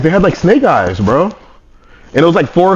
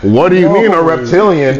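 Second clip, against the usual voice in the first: normal talking voice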